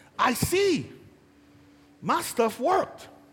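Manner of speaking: acted sarcastic, animated, swooping sing-song. Acting out a quoted remark to a healed man: imitating a sarcastic remark. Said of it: "this is a sarcastic statement out of mouth".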